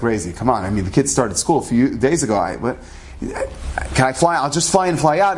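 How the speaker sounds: plain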